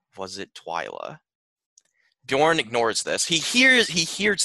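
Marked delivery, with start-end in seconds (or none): 0.2-1.2 very quiet, low, faint dying half-whisper, last breath. Gunther, held by Bjorn, half-whispers to him with his dying breath: Gunther's dying half-whisper. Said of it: "in his dying breath, whispers to Bjorn".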